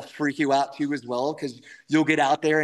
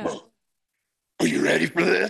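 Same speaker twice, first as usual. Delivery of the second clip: put-on macho guy voice. Acting out your own inner monologue, do it in a Macho Man Randy Savage voice. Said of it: "like it's the Slim Jim guy".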